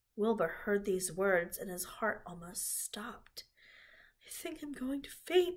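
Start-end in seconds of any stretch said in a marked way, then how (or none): 4.3-5.6 whispered, much higher pitched. Narrator reads the pig, just told he will be killed, speaking to the old sheep: whispered. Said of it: "he whispered to the old sheep".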